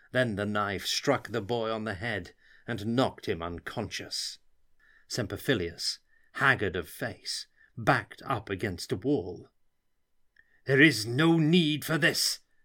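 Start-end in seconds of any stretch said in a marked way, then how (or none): 10.7-12.4 harsh delivery. Semperphilius, backed against a wall, speaks to Muinchbeck, said harshly. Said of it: "he said harshly to Muinchbeck".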